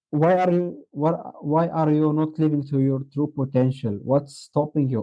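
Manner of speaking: normal talking voice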